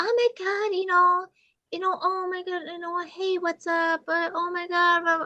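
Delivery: shrill, very high, grating, gushing babble. Describing a woman the speaker finds annoying to a co-host, imitating her voice. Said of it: "that's actually pretty accurate".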